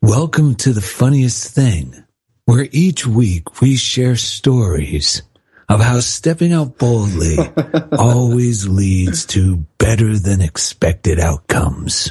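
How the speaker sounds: very low, sweet, sugary, hypnotic voice. Host opening the show, in a hypnotic Casey Kasem voice. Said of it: "I'm using my hypnotic voice".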